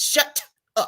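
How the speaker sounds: prim, lifted-up tone.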